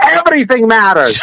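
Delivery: put-on snappy, high-pitched Italian accent. Retelling how the Italian bartender scolded them: imitating an Italian accent yelling. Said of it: "he yelled at me in Italian accent".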